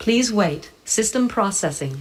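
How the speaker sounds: automated, machine-like robot announcement voice. A speaker demonstrates a store scanner's automated message in CVS robot voice. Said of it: "the robot voice".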